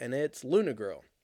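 ordinary delivery

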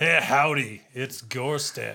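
grand epic caller voice. Imitating how a caller who calls in says hello: Gorstag's epic voice. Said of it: "Gorstag has the most epic voice".

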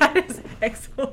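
high-pitched, loud laughing.

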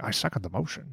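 very quiet, murmured TV detective voice. Imitating a character's line, saying it sounded like Columbo. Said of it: "it's almost sounded like a Columbo".

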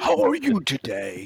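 deep, jolly voice. Speaker demonstrating how they answer the line, in a jolly Santa voice. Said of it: "Then I bring my voice to the line".

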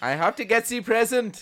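very loud, very high bad Austrian accent. Retrying the film line in a bad Arnold Schwarzenegger accent. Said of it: "I can't do an Arnie accent".

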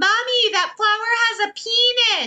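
put-on very high-pitched, piping small-child voice. Retelling what the kids say at the botanical gardens: imitating a young child. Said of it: "it's my kids that are like".

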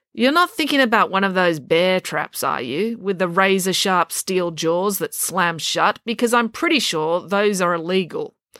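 plain

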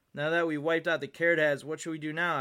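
plain

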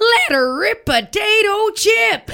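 mock announcer holler, very high, very slow, drawn-out, excited. Retelling a rodeo announcer's call during bull riding: imitating an excited announcer. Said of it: "announcer got so excited, he was like".

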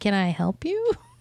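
polite, put-on customer service voice.

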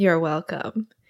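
imitated smug delivery. Retelling a scene where a character thanks himself: imitating a smug character. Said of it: "He's very smug".

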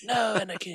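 said in a very high voice. Comparing a film scene to another film, imitating Qui-Gon Jinn. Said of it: "and Qui-Gon Jinn is like".

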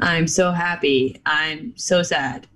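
dead flat, low, very slow monotone delivery. Mocking how Kurt talks: imitating Kurt's flat monotone. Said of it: "with no change in his voice at all".

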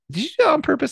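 very high, squeaky, mock accusing voice. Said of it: "I'm like".

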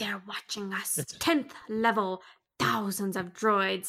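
put-on alien character voice. Praising a favorite movie alien and quoting his lines; alien character impression. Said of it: "That was a spot on impression".

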